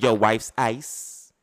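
very slow, drawn-out, menacing tone. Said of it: "you told them what".

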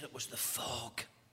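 feeble croak, weak and worn down. Retelling an exhausted swimmer's answer to reporters: imitating a croaky, weak voice. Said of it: "in a croaky voice, in her weakness".

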